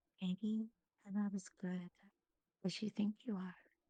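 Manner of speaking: hushed mystical voice. Whispering into a character's mind during a stage performance: mystical whispering voice. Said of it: "in my mystical voice and be like".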